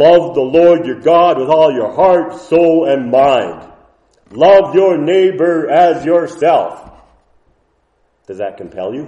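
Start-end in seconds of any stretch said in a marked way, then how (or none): 0.0-6.9 harsh, gruff, angry scolding in a raised voice. A speaker demonstrates how a Bible command can sound, in a gruff, angry voice. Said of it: "in a gruff, angry voice".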